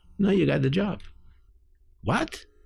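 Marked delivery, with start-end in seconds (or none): 0.2-1.0 put-on Yiddish accent, pitched up. Retelling what a woman said to the speaker, imitating her Yiddish accent. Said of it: "in her wonderful Yiddish accent".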